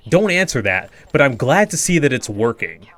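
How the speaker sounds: stern, firm, scolding chastising tone. Retelling a film scene where Peter is scolded: imitating a stern scolding. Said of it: "in such a stern way".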